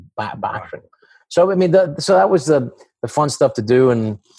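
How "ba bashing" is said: put-on Scottish accent, spoken more quietly. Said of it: "that accent, that Scottish bloke".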